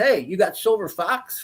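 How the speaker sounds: acted-out holler, kept light. Recounting how a woman hollered across the driveway to him, imitating a holler. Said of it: "she hollered across".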